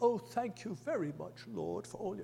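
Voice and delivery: prim, soft, sing-song, very proper delivery. Describing a man's sister right after she finishes praying: mock very proper voice. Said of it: "a very proper".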